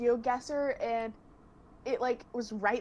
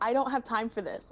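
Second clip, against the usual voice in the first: ordinary delivery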